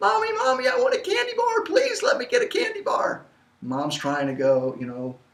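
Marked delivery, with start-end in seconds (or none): 0.0-3.2 put-on very high, whining, pleading little kid voice. Retelling a child begging a parent for candy: imitating a whining child. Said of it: "whining and complaining further".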